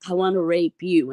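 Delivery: imitated whispering. Retelling what the people next door said outside the window at night: imitating someone whispering. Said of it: "walking by my window in the middle of the night whispering".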